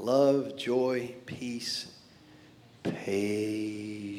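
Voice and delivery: very low, hushed, slow, stretched-out words. Speaker drawing out a short list for effect to listeners, slow, drawn-out delivery. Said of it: "Took me a while to say it because I just kind of wanted to get the effect there".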